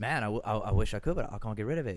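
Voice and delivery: put-on British accent, casual explanatory tone. Retelling explaining to a fan, in a British accent. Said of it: "so I try to explain it in a British accent".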